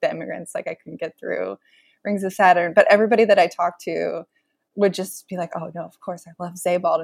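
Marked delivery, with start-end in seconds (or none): 5.5-7.0 soft, hushed, reverent tone full of devotion. Retelling how interviewed people praised the author: imitating a hushed reverential tone. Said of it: "in this kind of hushed, reverential tone".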